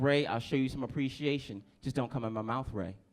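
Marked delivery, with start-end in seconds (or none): none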